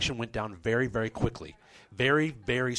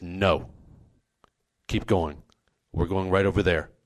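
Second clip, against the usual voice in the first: mock-stern voice, lower pitch; 5 semitones lower than usual. Retelling a long walk, the speaker quotes the first guy's answer, retelling a stern reply. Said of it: "very sternly says".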